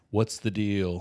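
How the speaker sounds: pressing, haggling, bargain-hunting tone. Doing an impression of Dylan negotiating with you: imitating Dylan negotiating. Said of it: "This is my impression of Dylan negotiating with you".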